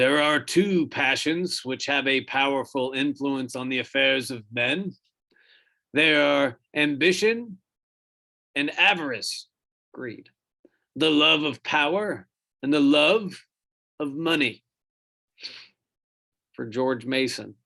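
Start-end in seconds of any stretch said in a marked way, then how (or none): 0.0-14.6 put-on old man voice. Reading a historical quote aloud to the audience, in an old guy voice. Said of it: "give you an old guy voice".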